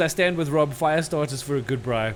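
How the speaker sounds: plain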